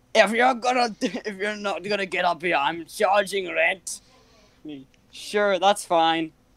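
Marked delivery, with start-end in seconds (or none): 0.1-3.9 put-on Scottish accent, higher. Retelling what the dad shouted from upstairs, in a scottish accent. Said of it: "Why did you make sound Scottish?".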